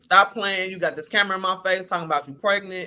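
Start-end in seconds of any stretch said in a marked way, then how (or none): none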